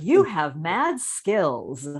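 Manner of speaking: very slow, swooping put-on old-person voice. Acting out an old person using young slang: imitating an old person. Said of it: "an old person being like".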